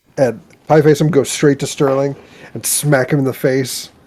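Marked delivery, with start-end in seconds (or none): none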